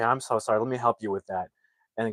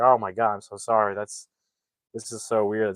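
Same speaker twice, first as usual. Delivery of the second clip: put-on embarrassed tone. Retelling a movie scene, a passenger apologizing: imitating an embarrassed apology. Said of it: "he's so embarrassed".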